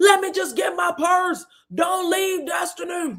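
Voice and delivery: very high-pitched screaming. Retelling someone screaming down a hallway: imitating someone screaming. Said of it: "She's screaming to Destiny".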